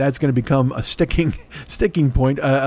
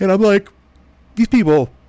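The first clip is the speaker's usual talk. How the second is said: words pushed out mid-yawn, pitched up; 7 semitones higher, 4 dB louder than usual. Addressing listeners before retelling an old story, yawning. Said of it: "sorry, yawning".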